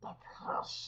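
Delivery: breathy, drawn-out whisper. Showing the Sméagol voice as a slower Stitch voice: slower Sméagol voice. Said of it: "a slower version".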